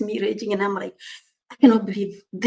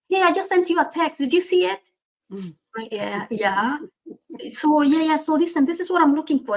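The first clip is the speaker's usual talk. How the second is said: fast, pitched-up, rattled-off rush of chatter; 6 semitones higher than usual. Retelling a demanding person's phone call, imitating her fast talking. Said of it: "she's speaking really fast".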